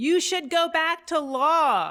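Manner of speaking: mock, mild, high jeering call, "law" drawn out. Speaker recalls a woman who heckled them, retelling a heckler's yell. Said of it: "she yelled".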